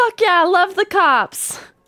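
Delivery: play-acted, high-pitched hollering yell. Retelling how a roommate went outside cheering at a cyclist's ticket: imitating roommate yelling. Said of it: "was yelling".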